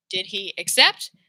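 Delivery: rising question-like tune on "accept". Showing intonation that goes up at the end of the question: rising pitch on accept. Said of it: "We're going up".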